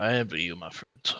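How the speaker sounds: very quiet, low, barely audible murmur under the breath. Watching the griffins fly off, the player character speaks under the breath. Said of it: "I say under my breath".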